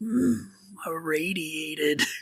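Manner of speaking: really deep, hushed voice sunk as low as possible. Imitating one of a game's main characters, in a really deep voice. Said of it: "in this really deep voice".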